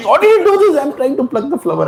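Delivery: mock, very high-pitched, shrill shout. Retelling Radharani shouting at a laughing Krishna: imitating Radharani shouting. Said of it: "And she's shouting".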